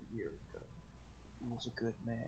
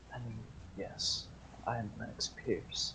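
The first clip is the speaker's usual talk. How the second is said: put-on character voice, lowered in pitch. Game master voicing a drunk character greeting a player, Lennox Pierce, lowered voice. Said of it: "He lowers his voice".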